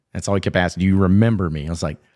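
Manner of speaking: normal talking voice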